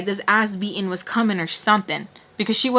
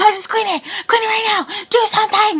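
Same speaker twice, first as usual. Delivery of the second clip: mock, very high, unhinged psycho screaming; 12 semitones higher, 4 dB louder than usual. Retelling being ordered to clean up a broken vase: imitating someone screaming. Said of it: "scream like a psycho".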